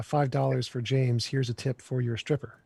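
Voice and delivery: normal talking voice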